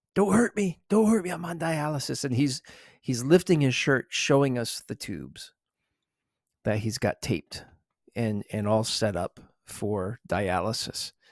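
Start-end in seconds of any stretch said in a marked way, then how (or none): 0.2-2.3 mock frantic, desperate begging cry, high pitched. Retelling how a man on dialysis yelled at the group, retelling desperate begging yell. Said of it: "he's like yelling, begging".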